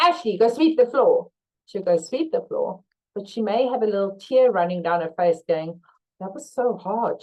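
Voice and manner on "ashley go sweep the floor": mock aggressive, harsh tone. Showing how an order sounds without please or thank you, mock-aggressive order. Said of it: "She said it so like aggressively".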